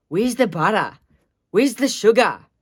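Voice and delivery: put-on Australian man's accent. Doing an impression of an Australian guy making cookies, Australian accent. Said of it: "my impression of an Australian guy".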